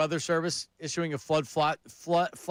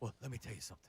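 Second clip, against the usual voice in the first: very quiet, low, deep, hushed theatrical voice; 5 semitones lower, 18 dB quieter than usual. Explaining how a commentator's voice gets low, Stephen A. low voice. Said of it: "when his voice gets low?".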